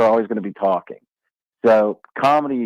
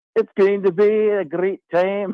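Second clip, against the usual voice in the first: fake Scottish accent, very high pitched; 9 semitones higher than usual. Chatting about Dollar Beer Night in Omaha tonight, in a fake Scottish accent. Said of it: "How excited would Scottish Frank Caliendo be".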